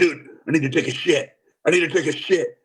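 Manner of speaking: rough, scratchy, gruff rasp. Retelling what a man said the first time they met: imitating a scratchy, gruff voice. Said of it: "he has a real scratchy, gruff voice".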